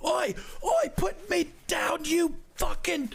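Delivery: very high-pitched, protesting bandit character voice. Voicing a bandit lifted into the air, protesting bandit. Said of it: "lifts this bandit into the air".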